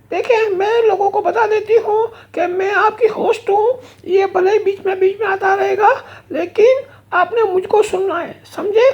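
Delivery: female bear character voice. The lady bear puppet addresses the show's audience, female bear puppet voice. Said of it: "lady beer ہوتی ہے female beer".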